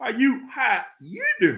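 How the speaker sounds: put-on animated tone, pitch swooping all over. Greeting viewers in the live chat: Madea voice. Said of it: "In my Madea voice".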